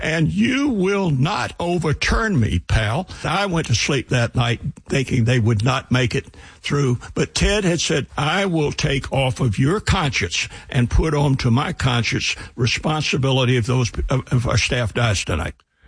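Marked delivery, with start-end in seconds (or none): 0.0-3.1 acted voice, louder and slower, leaning on each word. Retelling what he then told the speaker, retelling an even louder voice. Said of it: "in an even louder voice".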